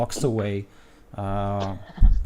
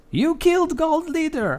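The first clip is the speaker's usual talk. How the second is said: shrill, very high-pitched goblin voice yelling. Voicing a goblin in the mob who accuses the party: goblin shouting. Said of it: "one of them shouts".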